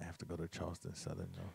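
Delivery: whispered aside. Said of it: "You gotta speak in the mic so Facebook can hear you".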